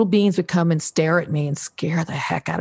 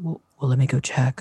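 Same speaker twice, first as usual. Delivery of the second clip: low, gruffer, masculine put-on man's voice; 4 semitones lower than usual. Recounting two beings she heard approach, she voices the other one: imitating a masculine voice. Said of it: "this more masculine voice said".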